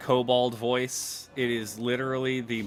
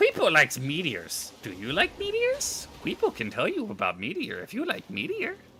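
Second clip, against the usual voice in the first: dumbest goofy voice, high and swooping; 9 semitones higher than usual. Recalling a kobold paladin played before: dumbest voice possible. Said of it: "I gave him the dumbest voice possible".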